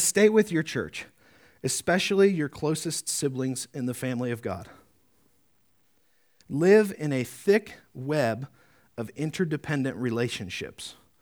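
read slowly and unhurriedly.

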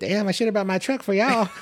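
small, very high, squeaky little voice. Retelling what Reggie said as the group squeezed into a lowered Camry, imitating Reggie's little voice. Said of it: "he has a little voice".

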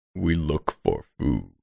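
deep, low, rumbling sea-creature monster voice. Playing a creature from below in a comic role-play bit, deep creature voice. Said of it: "Just a deepness".

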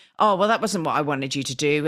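play-acted irritable, stressed, snappy delivery. Acting out a stressed boss who snaps at you: imitating a boss snapping. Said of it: "they snap at you".

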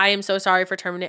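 put-on flat monotone. Retelling a company owner's scripted apology, imitating a monotone apology. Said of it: "all monotone".

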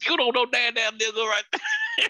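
very high, wildly swooping, taunting voice. Showing who the other speaker says they sound like: Samuel L. Jackson voice, Django. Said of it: "I sound like Samuel Jackson".

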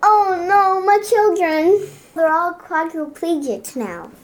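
high fake sobs cracking into laughter. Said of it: "Are you laughing or crying?".

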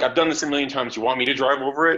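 usual speaking voice

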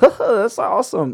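imitated giggling. Retelling how old people at church react: imitating someone giggling. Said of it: "they'll giggle like".

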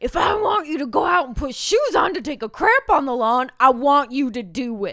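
booming, very loud, fed-up angry dad voice. Speaker told to say a line like an angry dad, angry dad voice. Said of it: "You have to say it like an angry dad".

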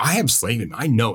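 ordinary talk

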